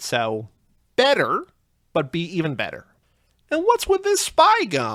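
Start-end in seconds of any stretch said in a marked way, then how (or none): 3.5-5.0 very high, swooping stand-up comedy delivery. Doing stand-up about spy racers in Seinfeld's voice: Jerry Seinfeld stand-up voice. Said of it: "That's me doing Seinfeld doing stand-up".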